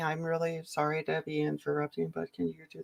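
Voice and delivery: soft, mild, well-mannered, overly polite voice. Describing how he asks people to explain things, imitating his polite voice. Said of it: "he does like his polite voice".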